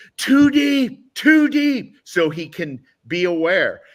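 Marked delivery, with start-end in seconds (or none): 0.2-2.0 very high, full-lung, all-out screaming. Retelling calling out to the quarterback in a loud stadium: imitating own screaming. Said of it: "I'm screaming at the top of my lungs".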